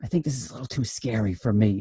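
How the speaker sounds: hushed, soft stage whisper, half-whispered. Retelling what Harrison said during a scary movie scene: imitating Harrison half-whispering. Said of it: "he whispers".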